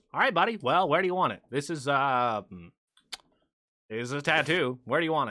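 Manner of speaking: casual, relaxed squirrel character voice. Voicing a squirrel with a tattoo gun asking a player: voicing a squirrel tattoo artist. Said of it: "and the squirrels goes".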